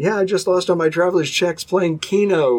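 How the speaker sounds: eager, thrilled, really excited voice. Speaker retells a man calling about his lost traveler's checks; imitating a real excited caller. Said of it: "he's real excited".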